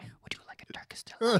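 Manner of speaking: whispered. Quoting the Turkish delight scene from a movie: whisper. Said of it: "I feel like I had to whisper, whisper into the mic".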